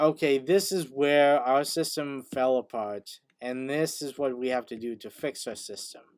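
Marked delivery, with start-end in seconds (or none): none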